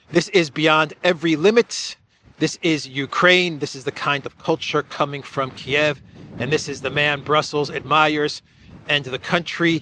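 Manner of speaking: normal talking voice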